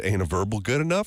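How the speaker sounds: ordinary talk, nothing marked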